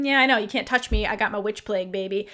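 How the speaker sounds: put-on smug voice. Retelling a recap scene where a villain gloats, imitating someone smug. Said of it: "smug about it".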